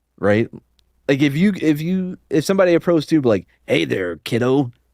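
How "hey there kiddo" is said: imitated creepy stranger voice. Acting out a stranger approaching someone, in a put-on creepy voice. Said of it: "maybe in a less creepy voice".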